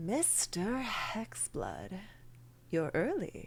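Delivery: soft, very silky, smooth delivery. Storyteller voicing Mister Weathervane greeting Hexblood, in a silky smooth voice. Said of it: "You hear a very silky smooth voice".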